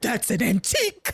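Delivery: shocked, horrified, aghast man's exclamation. Retelling a tv scene, imitating a horrified character: imitating a horrified man. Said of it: "how horrified he was".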